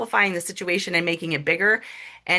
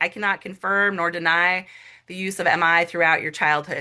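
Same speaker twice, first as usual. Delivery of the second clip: usual speaking voice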